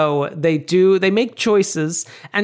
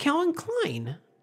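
acted matter-of-fact yet sweetly whiny high voice; 8 semitones higher, 10 dB quieter than usual. Quoting a movie character's answer to her dad: imitating a sweet, whiny, matter-of-fact reply. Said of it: "matter of fact, but, like, kind of, like, sweet and whiny".

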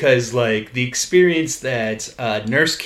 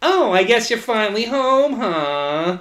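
very high, irritating nag voice, long drawn-out "huh"; 11 semitones higher than usual. Imitating a woman they find annoying, in her annoying voice. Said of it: "like that level of, like, annoying voice".

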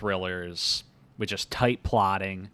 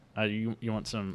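usual speaking voice

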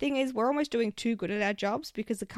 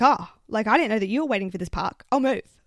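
put-on defensive tone, louder; 8 dB louder than usual. Retelling what the woman who took the parking spot said, imitating a defensive reply. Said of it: "she gets all defensive and she's like".

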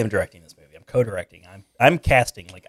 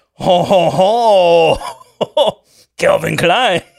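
exaggerated French accent, higher and louder; 8 semitones higher, 5 dB louder than usual. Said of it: "Can you picture that face with that voice?".

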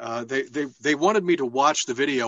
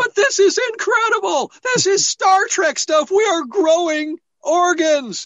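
put-on over-enthused outburst, very high and loud; 8 dB louder than usual. Retelling own reply after being asked to sound less excited: imitating own excited reply. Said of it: "could you not sound so excited about this?".

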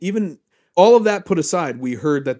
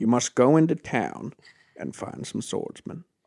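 put-on hushed, breathy, half-whispered, poorly done old-villager voice; 5 dB quieter than usual. Voicing the old villager man as Morgan Freeman: terrible Morgan Freeman impression. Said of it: "my terrible impression".

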